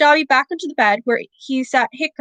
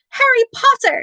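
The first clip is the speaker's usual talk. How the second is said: very high-pitched elf voice; 11 semitones higher than usual. Narrator reads the creature greeting Harry Potter, in a high-pitched Dobby voice. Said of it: "said the creature in a high-pitched voice".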